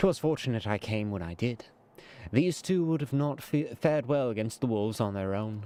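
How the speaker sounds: plain reading voice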